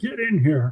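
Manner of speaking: mock, held-back, mild yell. Retelling what the sergeant shouted from inside his tent: imitating someone yelling. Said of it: "And he's yelling".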